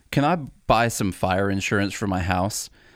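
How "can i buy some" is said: plain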